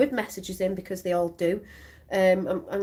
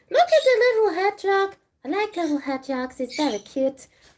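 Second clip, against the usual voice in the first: very high, raised, silly critter voice; 10 semitones higher, 6 dB louder than usual. Speaker shows a little watercolor hedgehog: put-on animal voice. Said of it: "Don't know why I'm doing that voice".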